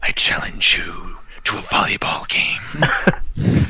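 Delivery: throaty and resonant voice. Narrating a scene, the speaker voices a creature issuing a challenge, throaty, resonant voice. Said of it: "with a throaty, resonant voice".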